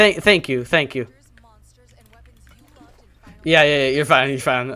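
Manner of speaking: sarcastic, put-on grateful tone. Answering chat after a mistake while playing: sarcastic. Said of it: "I'm being sarcastic".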